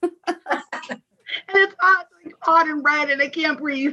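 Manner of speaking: gasping through laughter. Speaker cracking up during a conversation, laughing and out of breath. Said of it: "She can't even talk right now".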